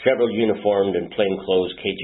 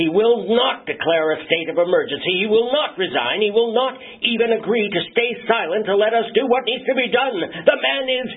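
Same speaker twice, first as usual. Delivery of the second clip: nearly panicked rapid bursts, much higher; 4 dB louder than usual. A general reports to a colleague, nearly panicked, in rapid bursts. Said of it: "nearly panicked words tumbled out of his mouth in rapid bursts".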